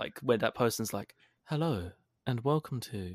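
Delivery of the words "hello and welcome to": calm, soothing meditation-app narrator voice. Explaining what something is like, the speaker mimics a meditation app; meditation app narrator voice. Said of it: "Like Calm or Headspace or any kind of app like that".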